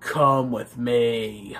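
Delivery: very low, eerie, creepy voice, "me" drawn out. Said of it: "he's just all creepy".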